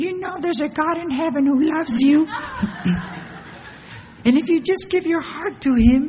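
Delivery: very high voice cracking and breaking apart. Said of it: "my voice is cracking".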